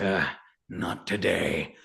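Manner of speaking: very deep, low, soft grunt. Narrator voicing a character answering a farewell before a fight: grunting. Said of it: "he just kind of grunts and goes".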